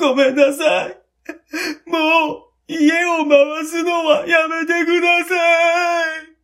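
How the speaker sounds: shouting through tears, very high and loud. Reading a first-person story, voicing the narrator's cry to his family: crying while shouting. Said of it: "と泣きながら叫んだ".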